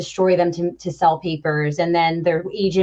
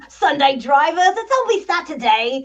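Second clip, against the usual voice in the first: put-on very high, very slow, drawn-out British accent; 10 semitones higher than usual. Quoting a favourite movie line said at slow drivers: British accent. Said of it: "I even do it in a British accent".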